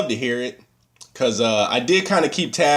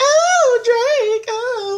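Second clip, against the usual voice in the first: very high little schoolgirl scream, shrieking. Retelling how mom reacted to a christmas cd gift, imitating a schoolgirl scream. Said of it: "She screamed like a little schoolgirl".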